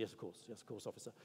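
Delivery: whispered, hushed, dutifully deferential tone. Retelling an answer to a police officer: imitating a dutifully deferential reply. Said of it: "dutifully deferential".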